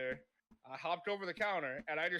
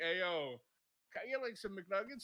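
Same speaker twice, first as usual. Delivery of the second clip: put-on dazed, stoned voice; 2 semitones higher than usual. Retelling how a customer who was clearly high ordered: imitating a high customer. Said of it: "clearly high off his rocker".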